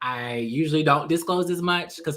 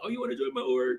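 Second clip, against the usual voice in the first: put-on old man voice, quieter; 4 dB quieter than usual. Retelling what a grandfather excitedly said: imitating grandfather's voice. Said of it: "grandfather voice".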